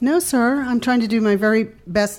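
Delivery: polite nice voice. Retelling a reply to a man who got in their face: imitating own nice voice. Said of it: "nice voice".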